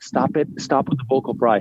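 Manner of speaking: usual speaking voice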